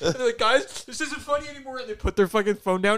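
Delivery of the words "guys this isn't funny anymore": mock sobbing, high, crying, genuinely upset. Retelling a TikTok of a person stuck in a finger trap; imitating someone crying. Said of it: "they're crying".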